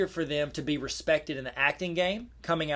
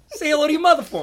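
shrill, booming movie-star voice, very high and loud; 11 semitones higher, 10 dB louder than usual. Doing a quick impression while chatting about actors: Mark Wahlberg impression. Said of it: "Mark Wahlberg".

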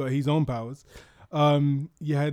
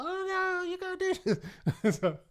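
bad cartoon villain voice, very high and slow; 4 dB quieter than usual. Recounting a story about a pale wizard, in a bad impression of him. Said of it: "That's my bad impression of him".

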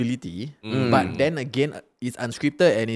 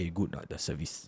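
hushed, quiet whisper; 6 semitones lower, 12 dB quieter than usual. Acting out a crude question from friends: put-on after hours voice. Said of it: "your voice changed also".

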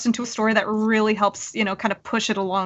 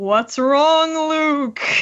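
very strong, big projecting voice, pitched up; 5 semitones higher, 4 dB louder than usual. Complaining about a game character's voice, imitating Van's very strong voice. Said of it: "It's a very strong voice, but it just sounds like".

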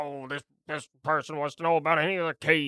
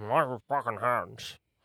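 mock drunken mumbling, lower; 4 semitones lower than usual. A speaker describes the listener walking past a drunk man, imitating a drunk mumble. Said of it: "the drunk dude who's like mumbles like".

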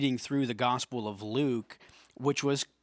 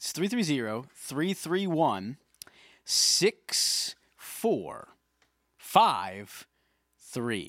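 really slow, deliberate, carefully spaced, unhurried delivery; 2 semitones higher than usual. Giving listeners a phone number for submitting questions: said really slow. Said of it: "I said that really slow".

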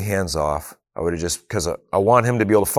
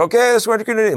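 put-on, very high-pitched yell; 3 dB louder than usual. A dad retelling instructing his scared son over a running motor: retelling yelling over a motor. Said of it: "I'm yelling over the motor".

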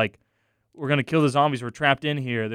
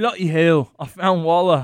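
loud, belted-out exclamation in a Scottish accent; 4 semitones higher, 6 dB louder than usual. Reading a line from the character Boomer, second attempt at the voice: Boomer in a Scottish accent. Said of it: "That's more Scottish".

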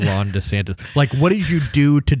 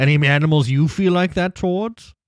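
fake British accent, higher pitch; 5 semitones higher than usual. Rereading a newspaper writer's post aloud after saying it needs a British accent: put-on British accent. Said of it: "read with a British accent".

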